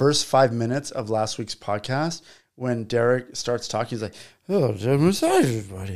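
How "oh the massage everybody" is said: mock drunken speech. Retelling a friend's words from last week's podcast: imitating drunk Derek. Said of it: "he's so drunk".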